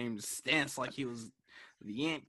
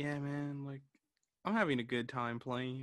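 put-on calm, laid-back, relaxed delivery; 4 dB quieter than usual. Recalling how the other player sounded after they lost, imitating a calm tone. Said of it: "and I was just calm?".

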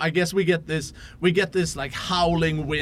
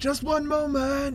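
very high, loud calling shout; 10 semitones higher than usual. Voicing someone behind a metal door in a snowstorm: shouting over a snowstorm. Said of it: "you hear a voice shout over the snowstorm".

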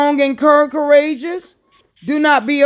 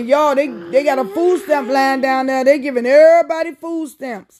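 ordinary delivery

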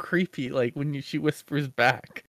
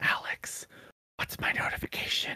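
soft put-on whisper. Retelling asking the smart speaker for a notification while Zoe slept, retelling a whisper. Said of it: "I whispered because Zoe was still asleep".

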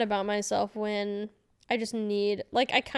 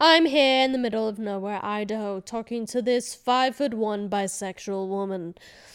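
put-on British accent; 4 dB louder than usual. Retelling a voice prompt recorded for a dating app: British accent. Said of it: "when I do a British accent".

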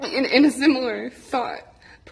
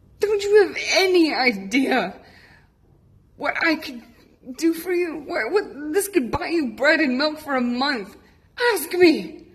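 acted, imploring, begging, pleading outcry; 3 semitones higher than usual. Recalling words cried out to a woman, a $100 bill crumpled in hand: retelling crying out to her. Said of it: "just crying out to her".

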